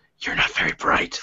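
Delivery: whispered, soft and breathy. Voicing a rabbit skull that insults its holder: whispering rabbit skull. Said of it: "You hear a whisper that says".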